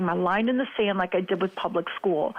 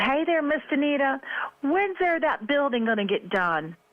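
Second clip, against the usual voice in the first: play-acted folksy country holler, pitched up; 7 semitones higher than usual. Retelling a grandparent calling out his car window: imitating Red yelling. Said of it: "he yells out his car window at me".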